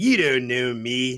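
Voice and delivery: mock, loud, very defensive tone. Retelling a film character's answers, every response very defensive: imitating a defensive reply. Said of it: "every response was very defensive".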